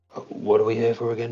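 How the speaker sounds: whispering in a put-on voice. Playing a character who leans to a companion's ear: whispering in character. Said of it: "he's gonna whisper in Wu Ra's ear".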